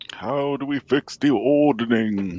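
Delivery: big voice of a giant. The speaker voices a giant character asking a question: booming giant voice. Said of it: "That's my giant voice".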